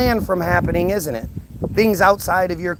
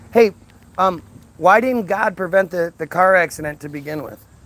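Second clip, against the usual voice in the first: ordinary talk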